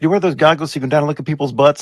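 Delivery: teasing, pointed accusing tone. Retelling how a friend accused a ten-year-old in the pool: imitating a friend accusing. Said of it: "she accused him of saying".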